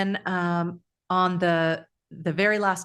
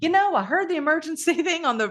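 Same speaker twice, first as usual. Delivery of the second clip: put-on folksy Southern accent, pitched high; 10 semitones higher than usual. Retelling what a man who pulled up said, the speaker uses a put-on Southern accent. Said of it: "I'm saying it like a Southern accent".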